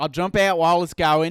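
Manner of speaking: loud, convincing, spot-on Australian accent. Practicing a line about skydiving with feedback from the other speaker, Australian accent. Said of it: "you nailed it".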